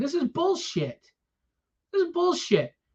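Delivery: bitter, resentful, fast, high-pitched indignant outburst. Speaker complaining about losing money at a show, bitter. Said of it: "If I sound bitter, damn right I am".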